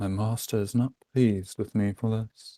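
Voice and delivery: muttered, hushed half-whisper under the breath. A player character hears more chuckling, half-whispered under breath. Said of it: "I whisper under my breath".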